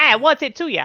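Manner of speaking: put-on cheeky chavvy child voice. Voicing a local child the party might question: chavvy child voice. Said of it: "They're just like".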